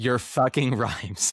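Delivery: angry, seething, furious outburst. Retelling what a man says to them after every show, imitating someone furious. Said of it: "so furious with me".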